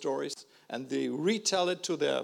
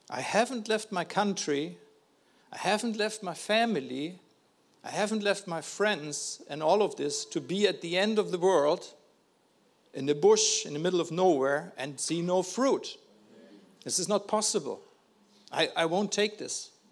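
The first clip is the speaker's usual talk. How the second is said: plain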